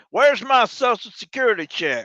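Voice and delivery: hollered, very high-pitched, big Texas twang drawl. Suggesting how to demand a social security check, yelling in a big texas twang. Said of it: "yell it out in a big Texas twang".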